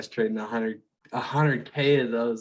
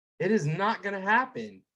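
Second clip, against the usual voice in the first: yell, higher pitched; 9 semitones higher than usual. Retelling a speech about relentless optimism: imitating Dan Pena yelling. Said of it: "yelling on stage".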